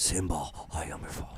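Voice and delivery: breathy whisper with heavy breathing. Joining a joke where Darth Vader quotes The Lion King: Darth Vader voice. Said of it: "a Lion King with heavy breathing".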